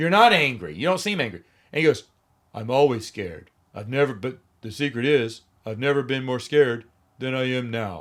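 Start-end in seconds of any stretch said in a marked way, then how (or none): 2.5-8.0 flat, expressionless deadpan monotone. Mocking a young actor who has one face and one mode, imitating a deadpan delivery. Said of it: "He delivers everything deadpan".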